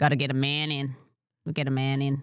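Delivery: put-on working-class Sydney Australian accent. Showing how a working-class Sydney woman spoke, in a working-class Australian accent. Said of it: "She spoke like this".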